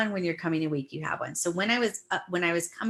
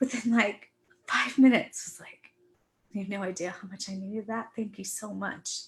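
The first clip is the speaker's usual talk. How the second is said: voice on the edge of crying; 2 semitones higher than usual. Recounting sending recorded songs to family, about to cry. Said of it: "sorry, I'm going to cry".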